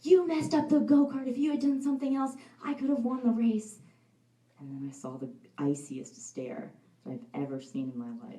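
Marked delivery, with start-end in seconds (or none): 0.0-3.8 mock very high, angry child screaming. Retelling screaming at dad after a bad race: imitating own past screaming. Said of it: "started screaming at him".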